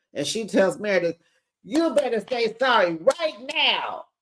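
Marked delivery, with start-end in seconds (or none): 1.7-4.0 frantic, insistent, high, pitched-up voice. Retelling a fight, the speaker imitates a woman screaming at another woman.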